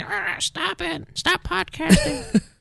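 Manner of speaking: high, slow cat voice.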